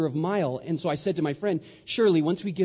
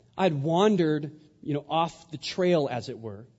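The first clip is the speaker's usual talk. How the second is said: ordinary talk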